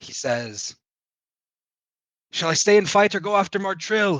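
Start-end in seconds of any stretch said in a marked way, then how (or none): 2.3-4.2 shrill, very loud, high, rushed full-volume shout. Voicing a character who yells a quick question across the fight: shouting as loud as possible. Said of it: "yelling out as loud as he can".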